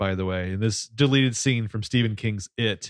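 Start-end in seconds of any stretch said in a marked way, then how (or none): none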